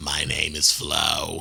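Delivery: put-on cigarette voice. Joking about how a voice would sound after more cigarettes: imitating a heavy smoker's voice. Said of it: "any more of a cigarette, it would sound like".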